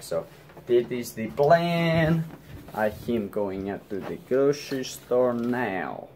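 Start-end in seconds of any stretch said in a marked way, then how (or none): 2.7-6.0 weak fake Russian accent, drawn out. Vlogger announcing a trip to the grocery store, in a pathetic Russian accent. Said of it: "That was it's a pathetic Russian accent".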